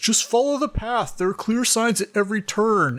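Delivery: very high, patronizing, condescending talking-down voice. Retelling a ranger answering a man's question, in a mock you're-an-idiot voice. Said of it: "in the most like you're an idiot voice".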